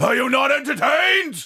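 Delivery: booming, very loud, shrill, swooping shouting voice. Asking the crowd a question after praising the boys, shouty voice. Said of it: "I am going to really use my shouty voice".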